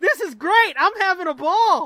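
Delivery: high, very loud hollered yell. Telling a joke, the other cannibal calling back up: yelling. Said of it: "The cannibal at the bottom yells".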